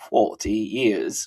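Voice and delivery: fake British pronunciation. Repeating a phrase for fun while greeting people by name: British accent. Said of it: "I'm gonna say it like a British person".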